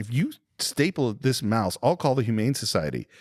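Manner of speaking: ordinary delivery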